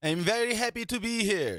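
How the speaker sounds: very high, loud, comic put-on movie-character voice. Answering a greeting in a put-on Coming to America voice. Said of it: "That was my Coming to America voice".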